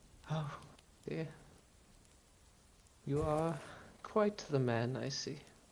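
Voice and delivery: hushed, close, ghostly woman's half-whisper. Voicing a ghost woman who leans close into the listener's character's face, half-whispering. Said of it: "and she whispers".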